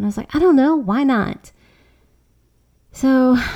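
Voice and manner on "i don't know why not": snippy little comeback tone. Retelling a reply to a daughter questioning the project: imitating own snippy reply. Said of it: "I was a little bit snippy".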